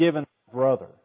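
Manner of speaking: usual speaking voice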